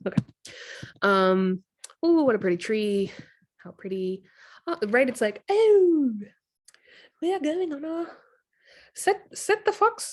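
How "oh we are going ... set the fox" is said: put-on failed British accent, higher and louder. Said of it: "Can't do a British accent".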